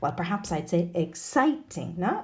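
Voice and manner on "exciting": exaggerated, heavy stress on the ci syllable of exciting. Lesson on intonation with adjectives: exaggerated stress on ci in exciting. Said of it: "Exaggerating the stressed syllable there".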